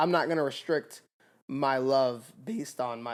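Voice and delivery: voice cracking. Mid-conversation, speaking in their own voice: voice cracking. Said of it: "why do my voice crack like that?".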